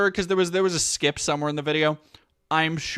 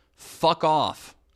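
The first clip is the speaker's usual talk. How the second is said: ordinary delivery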